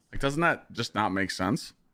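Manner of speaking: usual speaking voice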